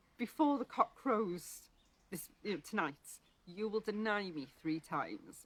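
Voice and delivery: ordinary talk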